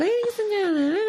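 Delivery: very high, squeaky, fluty little voice. Retelling hearing a wedding video of the ceremony: imitating own past fluty voice.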